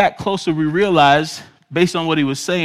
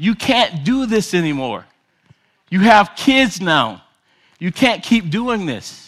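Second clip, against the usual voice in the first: mock angry scolding shout, mild and held in; 2 semitones higher than usual. Retelling a young man screaming at the mother of his children: imitating someone screaming in rage. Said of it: "he was screaming at her".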